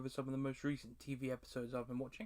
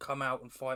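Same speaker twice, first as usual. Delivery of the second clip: usual speaking voice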